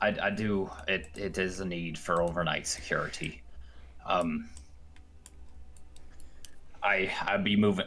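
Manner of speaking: talking like a pirate. Playing an old half-blind man at the door, talking like a pirate. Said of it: "I'm talking like a pirate".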